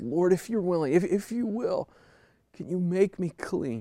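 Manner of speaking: desperate, begging, pleading tone. Speaker acts out a man falling on his face to beg, retelling a desperate plea. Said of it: "Can you hear the desperation in his voice?".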